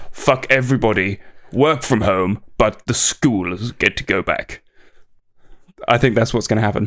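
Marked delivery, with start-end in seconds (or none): 0.1-4.6 mocking put-on voice, lower. Performing the expected lockdown speech after being asked: imitating his voice. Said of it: "do it in his voice".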